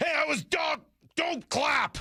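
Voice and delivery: play-acted very high, slow, drawn-out furious scream. Retelling the man with the whistle screaming at a kid, imitating a man screaming. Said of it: "He's screaming at him".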